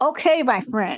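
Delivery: cutting, patronizing, condescending tone. Retelling how he called him a friend, in a mock-condescending tone. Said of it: "he said it in a kind of condescending way. Like".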